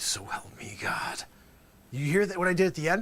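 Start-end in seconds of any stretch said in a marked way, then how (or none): 0.0-1.2 very slow sink to a near whisper. Coaching Dusty Fredericks on the oath, showing the ending: dropping to a near whisper. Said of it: "you got to almost come down to a whisper".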